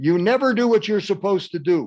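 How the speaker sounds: upset critical tone. Speaker acting out a critical parent in a role-play, upset voice. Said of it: "You do sound upset".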